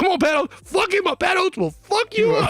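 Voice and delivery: mock, very high, rising, rallying shout. Retelling a headliner urging him on from stage: imitating Patrice yelling. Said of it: "he's yelling it like I'm his boy".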